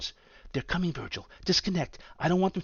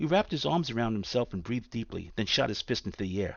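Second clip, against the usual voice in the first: ordinary delivery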